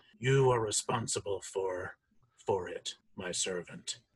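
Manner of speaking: sepulchral tomb-like echo. Voicing a corpse that turns to another adventurer, in an echoing sepulchral voice. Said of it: "that this kind of weird echoing sepulcher voice echoes out of the mouth".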